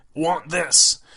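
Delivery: put-on high caveman toddler voice. Retelling what she said while pointing at them, in cave child voice. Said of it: "said in her cave child voice".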